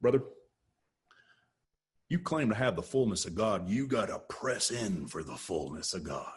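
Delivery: put-on low Southern preacher voice. Addressing listeners from a charismatic background, in a southern religious guy voice. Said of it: "that's my religious guy voice from the South".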